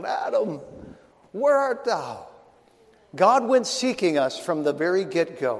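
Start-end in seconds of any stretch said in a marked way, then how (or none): 0.0-2.3 brokenhearted, grieving voice, high and swooping in pitch. Reading God's words from Scripture as a preacher instructed: brokenhearted father seeking lost child. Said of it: "as if God were a brokenhearted father looking for a lost child".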